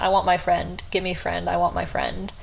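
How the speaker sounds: put-on sobbing. Retelling what a sobbing guy kept saying; imitating sobbing. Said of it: "The guy is just absolutely sobbing".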